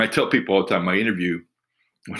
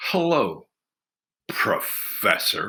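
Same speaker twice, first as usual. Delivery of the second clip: thick, dripping, acted-out sarcasm. Retelling a greeting on walking into an office: imitating a sarcastic tone. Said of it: "I can't even describe the amount of sarcasm".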